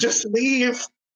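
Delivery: high, pleading yell.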